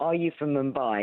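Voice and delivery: ordinary talk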